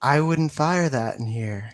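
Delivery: spooky, unsettling, eerie voice. A voice interrupts someone about to fire; creepy voice. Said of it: "the creepy ass voice he just did".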